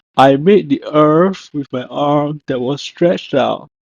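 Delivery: plain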